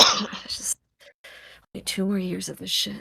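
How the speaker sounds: quiet muttering. Voicing a guard walking down the hall to himself: mumbling. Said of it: "you hear him just mumbling".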